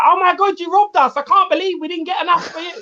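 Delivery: high-pitched, badly done mock Italian accent. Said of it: "I didn't know the Italian accent was Cockney".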